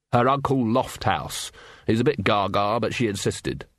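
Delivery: plain reading voice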